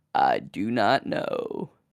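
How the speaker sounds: sexy, sultry voice, low and slow. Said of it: "The power of sexy voice Bibble".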